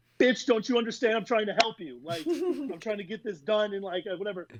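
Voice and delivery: furious, exasperated, seeing-red angry outburst. Retelling getting hit with tortillas during an argument: retelling his own angry outburst. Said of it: "I just saw red".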